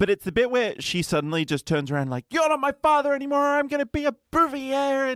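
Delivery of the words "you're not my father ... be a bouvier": very high, abrupt, sudden aggressive outburst. Retelling how Lisa suddenly turns on her father: imitating Lisa's sudden aggressive outburst. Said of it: "a very just sudden aggressive turn".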